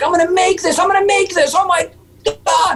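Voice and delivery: mock wild screaming way up in very high voice. Retelling a first landed jump, imitating own past screams. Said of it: "I just started screaming".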